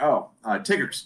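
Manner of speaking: mock, completely sincere-sounding, earnest delivery. Retelling a friend's mom's board game answer: imitating a sincere tone. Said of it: "she said it with, with so much sincerity".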